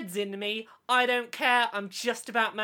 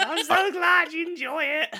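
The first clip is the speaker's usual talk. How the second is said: squeaky, very high, loud, very slow drawn-out voice; 6 semitones higher, 5 dB louder than usual. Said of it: "You sound like [name] having a wank".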